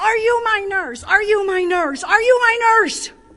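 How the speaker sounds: very loud, repeated yell. Retelling a patient running down the hall: imitating a patient yelling. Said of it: "starts yelling to me".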